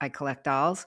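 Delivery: normal talking voice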